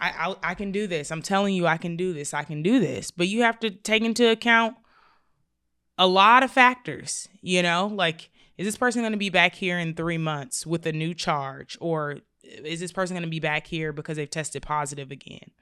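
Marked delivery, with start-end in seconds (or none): 0.0-3.1 put-on tearful crying voice with a pleading, begging tone. Retelling a person right in front of you: imitating someone crying and pleading. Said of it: "they're right in front of you crying, begging, and pleading".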